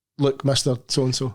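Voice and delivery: ordinary talk, nothing marked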